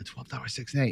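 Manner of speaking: soft, hushed whisper under the breath. Retelling sliding money to the dealer to place a bet, whispering. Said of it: "I remember whispering like".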